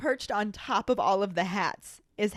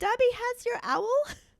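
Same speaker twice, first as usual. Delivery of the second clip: very high, tiny, squeaky elf voice; 13 semitones higher than usual. Retelling a scene where the elf wakes a sleepy Harry: squeaky Dobby voice. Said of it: "it's Dobby's squeaky voice that says".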